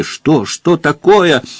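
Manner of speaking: high, frantic, alarmed and hysterical outburst. Reading a novel, the narrator voices a woman rushing after the counselor, a frantic scream. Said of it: "истошно закричала Варя".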